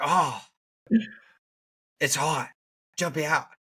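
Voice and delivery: high put-on Australian accent, played for laughs. Joking about an australian going through 9/11: imitating an australian accent. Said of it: "their accent makes it funny".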